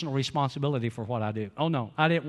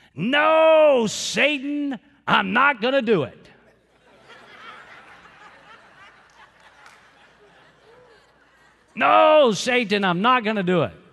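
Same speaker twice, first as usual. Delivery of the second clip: put-on very high, loud child's voice, long drawn-out no; 9 semitones higher, 7 dB louder than usual. Quoting a little nephew in the car's back seat, loud like a four-year-old. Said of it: "they hear in a loud voice".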